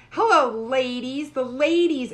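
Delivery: loud, slow, drawn-out calling delivery. Retelling how others greeted them with ladies: Jerry Lewis voice. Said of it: "like Jerry Lewis".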